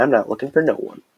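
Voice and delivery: lightly sassy delivery with a little attitude. Showing learners how to say a double negative line, with a little sass. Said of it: "You gotta say it with a little sass".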